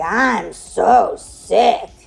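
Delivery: put-on sick-sounding, guttural voice. Retelling a phone call with a sick friend: imitating Kim's sick, guttural voice. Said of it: "that's how she sounded on the phone".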